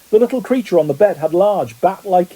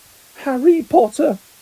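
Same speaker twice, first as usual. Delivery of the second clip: high-pitched voice like a tiny creature; 8 semitones higher than usual. Narrator reads the creature's reply to a nervous hello; high-pitched Dobby voice. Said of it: "said the creature in a high-pitched voice".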